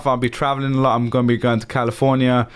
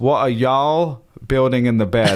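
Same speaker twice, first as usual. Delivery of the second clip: abysmal, played-up put-on American accent. Reading out a question from the chat: best American accent.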